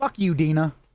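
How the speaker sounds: quiet mumbling under the breath. Voicing a character's reply as game narrator: mumbling under her breath. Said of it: "Ellie mumbles under her breath".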